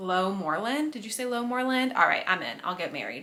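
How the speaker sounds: usual speaking voice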